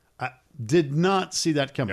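ordinary delivery

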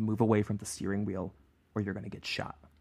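whispering voice. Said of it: "he leans in and he whispers something audibly".

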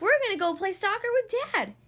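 shrill, very high-pitched, loud yell. Charging in with the other children, Lester tells Laura: yelled. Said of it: "yelled lester".

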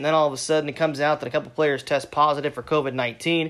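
normal talking voice

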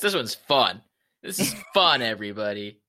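dry, mocking, slow, sing-song sarcastic tone. Commenting on the podcast after a gloomy setback: sarcastic.

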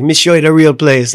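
put-on Jamaican accent. Retelling what an old local man said: imitating a jamaican accent. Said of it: "in his Jamaican".

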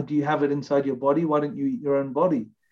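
usual speaking voice

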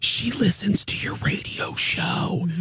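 put-on loud whisper. Retelling what the hairdresser whispered about a woman: imitating a loud whisper. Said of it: "She whispers to me".

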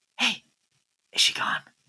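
soft, hushed, barely voiced whisper. Voicing someone who asks from hiding if she is gone: whispering. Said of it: "someone whispers".

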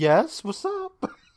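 high, overly chummy, best-pals friendly tone, acted out. Retelling a character's reply to her captors: imitating an overly friendly reply. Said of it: "she turns around like they're her best friends".

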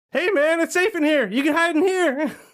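squeaky, very high, over-eager little worm voice. Asked to give an impression on the podcast, an overexcited worm impression. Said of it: "the overexcited worm".

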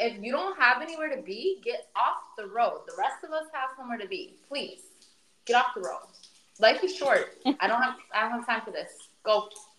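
usual speaking voice

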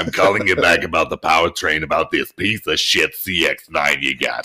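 put-on heavy raspy woman's voice. Retelling a phone call, a man acts out what a mechanic told him, imitating raspy smoker voice. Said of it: "she sounds like she smokes a carton and a half a day".

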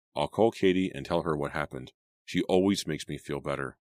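ordinary delivery

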